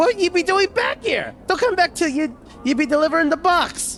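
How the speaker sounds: very high-pitched screeching voice. A narrator voices Mars as he sees the player approaching, in a high screeching voice. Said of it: "In a high screeching voice".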